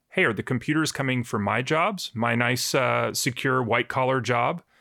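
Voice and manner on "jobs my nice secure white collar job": ordinary talk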